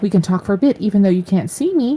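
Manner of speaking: put-on little girl voice. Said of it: "Sounds like the voice of a little girl".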